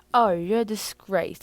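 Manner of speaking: hint of British accent. Explaining to viewers why some British slips into the speech, slight British accent. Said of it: "a little touch of British on the side".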